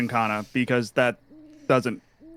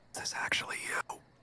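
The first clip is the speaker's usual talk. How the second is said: soft unvoiced whisper. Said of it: "Are you whispering out loud?".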